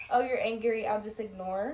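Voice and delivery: ordinary delivery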